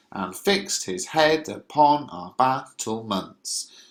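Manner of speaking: alternating strong and weak beats on every syllable. Reading a verse line to show its stressed syllables: stress every other syllable. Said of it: "the emphasis is on uh, every other syllable".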